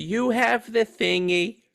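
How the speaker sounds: very slow, sugary-sweet, high-pitched delivery. Imitating a wife answering her husband: imitating a sweet wife. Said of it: "She's like".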